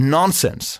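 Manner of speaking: put-on "nonsens" said with American accent and articulation. Retelling how someone says the word nonsens: american english pronunciation. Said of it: "in der amerikanischen Artikulation".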